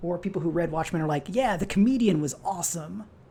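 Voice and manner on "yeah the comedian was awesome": sarcastic voice, sincere on surface, raised, pitched-up. Imitating Watchmen readers praising the Comedian, put-on sarcastic voice. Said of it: "that was my sarcasm voice".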